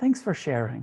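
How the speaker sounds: friendly. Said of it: "with friendliness and say".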